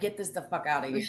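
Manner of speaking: put-on fed-up, angry outburst. Retelling flinging work off the porch when mad: imitating own angry outburst. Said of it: "I get so mad sometimes".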